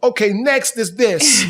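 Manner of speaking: high, slow put-on inside voice.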